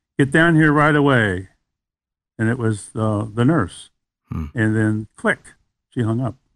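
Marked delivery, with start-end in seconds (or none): 0.2-1.5 mock grumpy voice, phone-like. Retelling a morning phone call from the nurse, retelling a grumpy voice. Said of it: "a very grumpy voice on the other end says".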